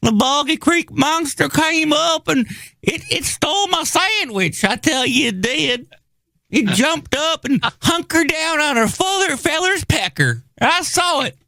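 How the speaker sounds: very high put-on old prospector voice. Doing a put-on voice about a monster stealing a sandwich: old forty-niner prospector voice. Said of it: "that was my, uh, uh, forty-niner".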